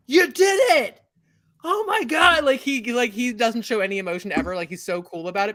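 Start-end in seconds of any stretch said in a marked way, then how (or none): 0.1-2.4 very high, drawn-out, excited freaking out. Voicing David Blaine greeting the player, freaking out with excitement. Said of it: "David Blaine is like".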